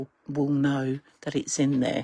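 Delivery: quiet, low, hushed voice. Pointing out a secret side pocket, said quietly. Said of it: "and I'm going to say this quietly".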